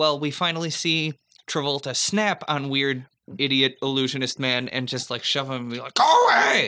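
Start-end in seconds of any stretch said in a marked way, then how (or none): 5.9-6.7 very high, very loud, reined-in held-back shout. Retelling Travolta shoving the illusionist away: acted yell, held back. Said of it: "I'm just yelling".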